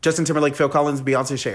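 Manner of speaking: quick, fast rattled-off delivery. Repeating quiz answer options on request: saying them really fast. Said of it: "I'm gonna say them really fast".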